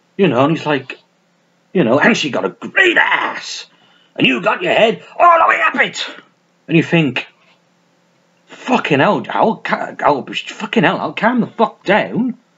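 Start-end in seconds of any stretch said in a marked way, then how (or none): 2.0-6.1 mock full-lung shouting, much higher. Mocking an actor's over-the-top post-scarface roles, imitating him shouting. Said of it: "he's shouting at the top of his lungs".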